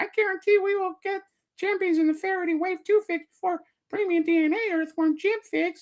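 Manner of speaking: tiny gnome voice, very high. Speaker, talking with John, delivers a line in a little gnome voice. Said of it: "Does that sound like a little gnome? That was that's my little gnome voice".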